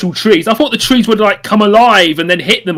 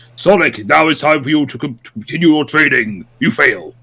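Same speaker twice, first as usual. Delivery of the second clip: put-on cool character voice, lower pitch; 6 semitones lower, 3 dB quieter than usual. Describing a character and imitating his voice: imitating Gandar's cool voice. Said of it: "has this really cool voice that's something like".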